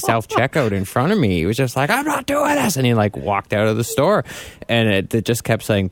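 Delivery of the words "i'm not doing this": angry male voice, very high-pitched outburst. Retelling a man who got mad at self-checkout, imitating an angry man. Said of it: "he got mad".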